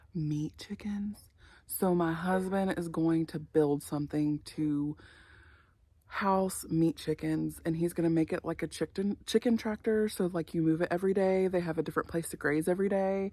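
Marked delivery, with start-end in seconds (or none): 0.1-1.1 secretive hushed whisper. Sharing a plan while the girls are listening: whispering. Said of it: "I have to whisper".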